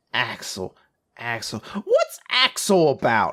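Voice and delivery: very slow, low, swooping, drawn-out sing-song voice. Retelling a conversation about new movies, imitating the other guy's voice. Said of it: "I'm doing the voice".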